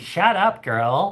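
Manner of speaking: put-on sarcastic camp voice.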